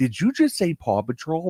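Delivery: high, excited, surprised, disbelieving tone.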